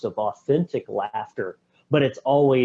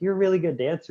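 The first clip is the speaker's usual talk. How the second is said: put-on pitched-up, high girl's voice; 6 semitones higher than usual. Retelling a film scene where he role-plays with the neighbor girl: imitating the neighbor girl's voice.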